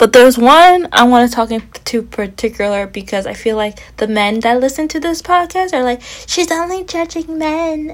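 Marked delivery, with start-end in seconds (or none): 6.3-7.9 high, soft, put-on girly voice. Speaker voices how the podcast's male listeners will react: put-on girly voice. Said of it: "That's my girl voice".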